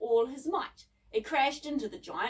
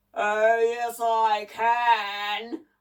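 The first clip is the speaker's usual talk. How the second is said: crackly, booming voice, drawn out; 3 semitones lower, 6 dB louder than usual. Narrator reads an unseen voice from the greenhouse answering a scornful remark, crackly booming voice. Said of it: "A crackly voice boomed out from the greenhouse".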